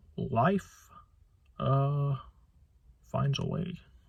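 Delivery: slow, stretched-out, swooping sing-song delivery. Doing an impression of a famous movie line: Jeff Goldblum impression. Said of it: "So here's an impression of Jeff, Jeff Goldblum's famous line".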